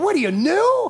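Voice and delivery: put-on Yiddish-inflected accent.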